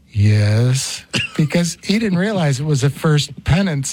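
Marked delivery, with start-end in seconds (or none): 0.2-1.1 deep, long, drawn-out priestly yes. Recalling a first penance, the speaker quotes a voice beyond the door: imitating a deep voice. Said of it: "I hear this deep voice go".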